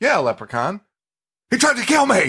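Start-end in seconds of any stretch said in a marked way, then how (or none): 1.5-2.3 put-on very high, enraged, furious shriek. Retelling a movie scene where a character argues with hotel security: imitating an angry scream. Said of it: "Screams it so angry".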